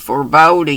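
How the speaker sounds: ordinary delivery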